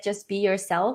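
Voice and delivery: ordinary delivery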